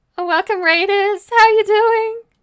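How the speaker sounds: tearful crying voice. Welcoming raiders while tearing up with joy, tearful and crying. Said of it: "I'm crying".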